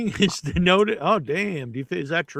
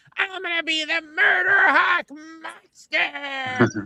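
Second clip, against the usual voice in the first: put-on very high, very slow twelve-year-old voice; 10 semitones higher than usual. Mocking a wrestler's name, imitating a twelve-year-old kid. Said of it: "you sound like you're twelve".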